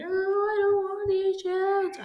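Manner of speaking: put-on very high, wailing, crying child tantrum.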